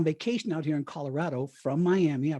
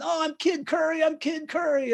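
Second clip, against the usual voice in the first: very high, called-out shout; 12 semitones higher, 3 dB louder than usual. Retelling falling out of a car as the Secret Service close in, retelling a yell. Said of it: "I'm yelling".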